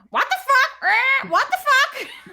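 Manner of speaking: very high, loud, slow, drawn-out cartoon parrot voice. Voicing the green and blue parrot on her shoulder: Boris the parrot voice. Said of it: "Boris is on her shoulder going".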